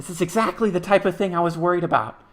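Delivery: high, loud little raven voice. Game master voicing a raven perched on a player's shoulder: little raven voice. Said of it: "in his little raven voice".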